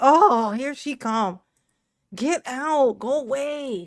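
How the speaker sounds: very slow, drawn-out, pretend screaming. Voicing a kitchen telling her to leave: pretend screaming kitchen. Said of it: "My kitchen be screaming for me to leave".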